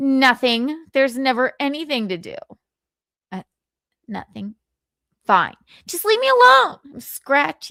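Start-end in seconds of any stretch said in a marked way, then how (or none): 0.0-6.8 put-on grumpy, fed-up voice, higher pitch. Showing an impression of Michaeline, imitating Michaeline in a bad mood. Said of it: "This is Michaeline in a bad mood".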